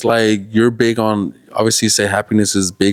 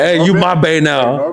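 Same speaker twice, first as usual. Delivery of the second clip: aggressive, pushy man's voice, slow and pitched up; 6 semitones higher than usual. Imitating dudes who come on aggressively early on: imitating an aggressive dude. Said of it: "there's some dudes out there, like".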